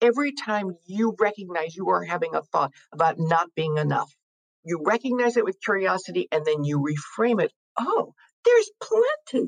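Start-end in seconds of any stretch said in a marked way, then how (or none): 7.8-9.5 very high, bright, emotional, excited lift. Showing how to reframe a thought of not being enough, excited, emotional. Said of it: "notice how I said in my voice, there was some emotion, some excitement, some possibility".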